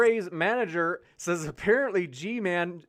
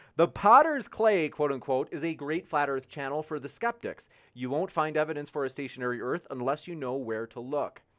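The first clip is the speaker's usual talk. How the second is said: usual speaking voice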